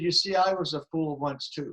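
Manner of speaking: normal talking voice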